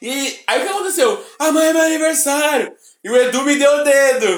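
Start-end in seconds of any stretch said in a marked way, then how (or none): 1.4-2.7 shouting, higher pitched. Retelling calling out to people in a queue: retelling own yell. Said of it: "Eu comecei a gritar".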